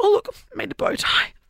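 very high, squeaky, proud voice.

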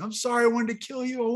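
put-on broken bawling. Retelling the moment after grabbing the knife, retelling broken bawling. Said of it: "I started bawling".

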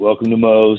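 put-on flat, unexcited tone. Retelling how staff greeted on walking in: imitating an unexcited greeting. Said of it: "It wasn't quite that exciting".

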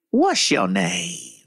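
low, spooky storybook witch voice. Retelling a customer at a drive-through window, in a witch voice. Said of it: "Like a witch".

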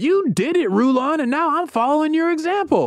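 shrill, high-pitched shout. Retelling a son shouting back at his father, retelling a shout. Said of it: "He shouts back".

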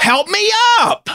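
put-on very high-pitched, indignant, angry tone. Retelling a fallen older woman's demand in a parking lot: imitating an angry woman. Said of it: "is angry and goes".

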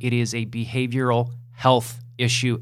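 health leaned on and stressed. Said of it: "emphasis on health".

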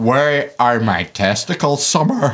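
Northern Irish accent, laid on thick for comic effect. Arguing that any line is funnier in a northern irish accent, saying one in it. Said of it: "you say anything in a Northern Irish accent, it's funnier".

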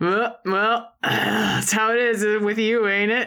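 offhand, sarcastic, disparaging tone. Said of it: "his sarcastic".

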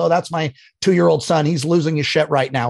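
ordinary delivery

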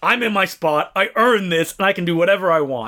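ordinary talk, nothing marked

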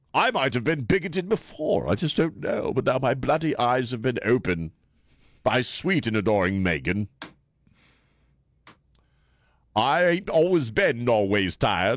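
put-on British prince voice. Mocking the prince in an impression that sounds like Stewie from Family Guy. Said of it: "Why does the prince sound like Stewie on Family Guy".

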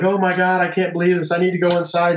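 high, tearful, sobbing bawling. Retelling how she came out of the house in tears, imitating someone bawling. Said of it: "just bawling".

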